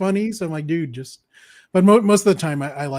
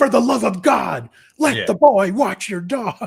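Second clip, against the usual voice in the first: over-eager, pitched-up, high hype man delivery; 5 semitones higher than usual. Retelling the sketch, Farley as the hype man: Farley hype man voice. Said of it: "Farley as the, the hype man".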